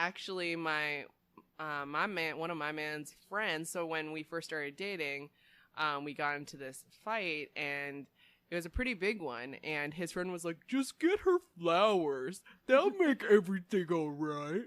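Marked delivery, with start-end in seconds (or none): 10.7-14.6 animated, raised voice with swooping pitch. Retelling what a friend said after a fight: imitating a friend's voice. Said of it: "In that exact voice".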